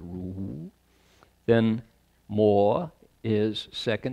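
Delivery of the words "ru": "Ru" said with pitch sliding upward. Reading characters and their tone marks: rising tone on Ru. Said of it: "that mark on top shows that it's a rising tone. So it's Ru".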